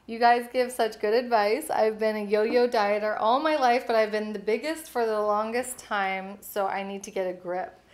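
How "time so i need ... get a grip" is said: ordinary talk, nothing marked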